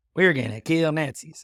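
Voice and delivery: hammed-up, thick, put-on Kentucky accent, loud and high. Imitating a film role's line: Brad Pitt's over-the-top Kentucky accent. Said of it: "really over the top, whatever it's supposed to be, Kentucky accent".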